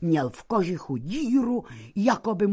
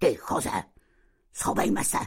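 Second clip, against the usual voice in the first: low, growling voice; 8 semitones lower than usual. Narrator reads Karmenka speaking to Don Choze, growling. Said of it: "zavrčela na Dona Chozého".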